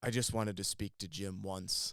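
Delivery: put-on mock worn-down, defeated, resigned delivery. Telling a story about a film set, the speaker quotes a man, acting out a defeated man. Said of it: "just like a man defeated".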